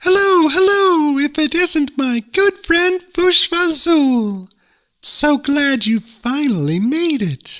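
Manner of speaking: very high, chirpy little voice, unhurried pace. Narrator reading a tiny messenger greeting his friend the night-hob, in a chirping voice. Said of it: "stood [name] the Tiny, tipping his red top-hat. / stood [name] the Tiny, tipping his red top-hat. "Hoo-hoo!" went the bewildered night-hob, and again, "Hoo-hoo!" He just couldn't think of anything bet".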